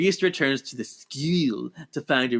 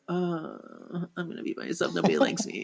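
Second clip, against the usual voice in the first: put-on hushed, raspy goth-kid voice; 4 semitones higher, 6 dB quieter than usual. Speaker describes a character who acts like a goth kid, raspy goth-kid impression. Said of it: "She's got that kind of raspy voice".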